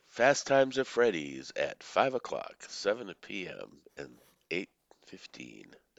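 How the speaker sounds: sing-song recorded phone-line announcement voice. Told they sounded like a movie theater phone line, the speaker imitates the movie theater phone recording voice. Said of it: "That's what you sounded like".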